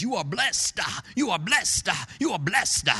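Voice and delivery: very Southern preacher-style pulpit voice. A preacher mimicking some other preacher during a sermon: very southern preacher voice. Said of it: "in a very southern preacherish voice says".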